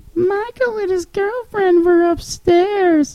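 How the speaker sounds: put-on soft, very high, tiny little child's voice. Retelling his younger brother's words as she walked in, in a little kid voice. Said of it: "in his little kid voice".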